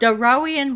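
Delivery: ordinary delivery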